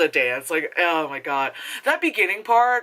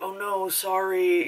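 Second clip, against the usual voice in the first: put-on grave, somber, elderly old-man voice; 4 dB quieter than usual. Imitating a film character apologizing after a car hit: somber old man Jackie Chan voice. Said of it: "very somber, like, old man".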